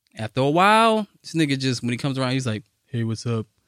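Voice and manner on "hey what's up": put-on low, dead-level monotone with no life. Acting out someone from growing up who changed: mock flat monotone. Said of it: "Just like mad monotone".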